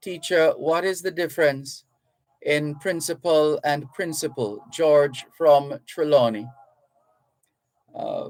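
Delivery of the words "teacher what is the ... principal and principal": usual speaking voice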